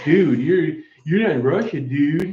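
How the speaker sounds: put-on casual commenter voice saying "dude". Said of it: "I can just hear the voice".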